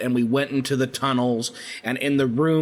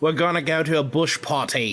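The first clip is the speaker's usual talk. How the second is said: bad, put-on, fake Australian accent. Answering a question about the Outback, trying an accent: bad Australian accent. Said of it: "y'all both suck at Australian accents".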